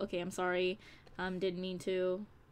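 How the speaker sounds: ordinary talk, nothing marked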